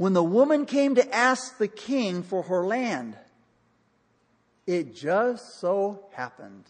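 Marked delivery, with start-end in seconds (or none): 4.7-6.6 slow, sarcastic, ironic drawl. Preaching on a Bible story, stressing a coincidence: sarcastic. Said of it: "I know I'm saying that sarcastically".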